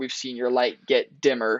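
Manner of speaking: usual speaking voice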